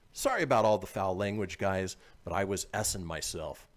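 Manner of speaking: usual speaking voice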